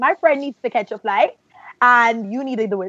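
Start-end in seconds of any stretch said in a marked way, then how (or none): none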